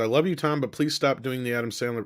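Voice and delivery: ordinary delivery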